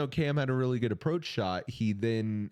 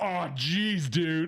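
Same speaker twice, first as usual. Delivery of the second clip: high, jeering heckler's shout on a live mic; 7 semitones higher than usual. Retelling what a crowd member said on a hot mic: imitating a fan on a hot mic. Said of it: "it was a hot mic".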